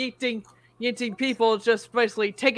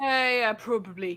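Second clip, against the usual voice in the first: put-on British accent; 4 dB quieter than usual. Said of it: "I'm using the British accent".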